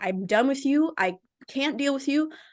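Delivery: mock furious, angry, fed-up outburst. Speaker retells cutting off a woman before blocking her, retelling an angry outburst. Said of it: "it made me just so angry".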